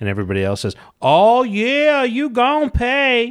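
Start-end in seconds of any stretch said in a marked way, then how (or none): 1.0-3.3 over-the-top Southern drawl, very high, very slow. Speaker retelling a group of characters joining in a threat, flamboyant southern accent. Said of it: "really flamboyant southern accents".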